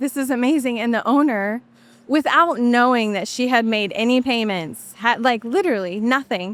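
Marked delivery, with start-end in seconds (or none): 0.0-0.8 put-on bawling, sobbing. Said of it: "she was bawling".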